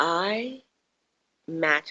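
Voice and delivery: soft, special declaring tone. Teaching listeners to copy how teachers declare affirmations, in a special affirmation voice. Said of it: "they go into this particular voice when they say affirmations".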